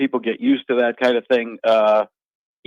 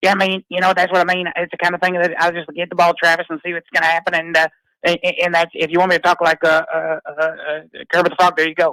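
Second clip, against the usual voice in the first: put-on Texas Southern accent with throat bubble, higher; 5 semitones higher than usual. Showing how a Patrick Mahomes impression sounds: Patrick Mahomes impression. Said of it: "Can you do Patrick Mahomes?".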